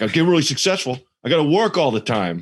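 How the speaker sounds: put-on thick Massachusetts townie accent. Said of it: "thickest Massachusetts accent ever".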